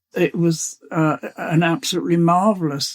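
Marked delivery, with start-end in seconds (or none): none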